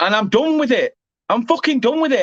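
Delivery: angry, pissed off and fed-up declaration. Complaining about people who message other streamers: angry. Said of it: "I'm sorry that I'm so pissed off".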